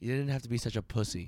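muttered aside under breath. Telling a driving story, the speaker quotes a man's remark under his breath. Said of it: "And under his breath".

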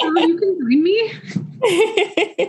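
high, slow speech through tears. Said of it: "I've been crying the whole time".

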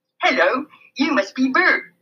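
put-on children's puppet-show character voice. Narrator reads a greeting at the bathroom sink; Sesame Street voice. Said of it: "he said in his best Sesame Street voice".

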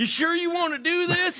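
put-on country guy voice. Retelling a video, imitating rednecks in the background. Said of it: "rednecks in the background going".

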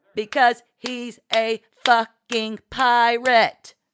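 shrill, enraged screech, every syllable hit. Narrating fiction, voicing Marci's reply to a question in dialogue: screeching. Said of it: "Marci screeched".

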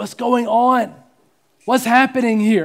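acted anguished crying out, high and loud. Speaker voices a man crying out to the Lord, acting out an anguished cry. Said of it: "He cries out in anguish".

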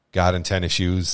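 ordinary delivery

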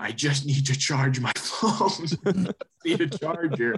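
stretched-out, drawn-out yell. Retelling needing a charger in the middle of the street, reenact the yell. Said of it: "And then I started just yelling".

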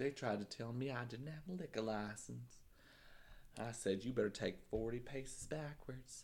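fake Texan accent, very soft and quiet. Telling a made-up story while showing off an accent, put-on Texan accent. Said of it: "you sound Texan".

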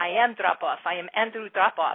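put-on, fake Russian accent. The speaker retells what their husband said, in a put-on Russian accent. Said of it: "he went into this whole Russian accent".

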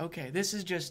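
ordinary talk, nothing marked

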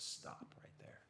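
acted firm, tender, loving whisper, hushed. Recounting a voice heard while reading Matthew, imitating a firm but loving voice. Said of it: "in a very firm but loving voice".

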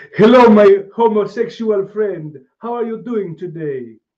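bad put-on Jamaican accent, very high, very loud, shrill. Retelling a greeting he said to someone, in a bad jamaican accent. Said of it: "I said in my bad Jamaican".

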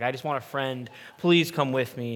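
mock bawling, tearful pleading voice. Speaker acts out their dad begging Becky to ride with him: imitating dad bawling, pleading. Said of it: "he was like bawling".

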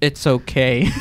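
put-on calm tone with restrained irritation. Retelling a waiter's reply after a drink spill: imitating a calm reply while annoyed. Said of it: "I could tell that he was annoyed".

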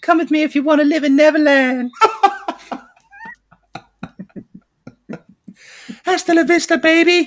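very high, swooping squeaky put-on voice. Squeezing a joke reference into a famous line; high-pitched put-on voice. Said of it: "You just basically do any high-pitched voice".

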